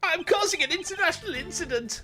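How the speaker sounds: put-on German accent. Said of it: "my German impression".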